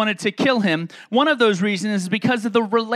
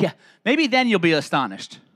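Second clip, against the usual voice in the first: mocking, sarcastic tone, voice swooping; 4 semitones lower than usual. Rendering a Bible reply to critics as sarcasm; sarcastic.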